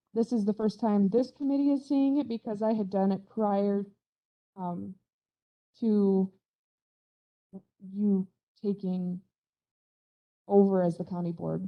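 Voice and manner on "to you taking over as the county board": halting, stuttering, stumbling over the words. Presenting the county's state application to a committee, stuttering. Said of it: "Sorry, I'm stuttering".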